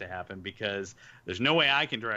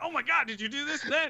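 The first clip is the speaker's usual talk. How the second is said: very high, eager, excited acted cut-in. Retelling interrupting an interviewee's story: imitating own excited interruption. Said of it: "I'm so excited about what".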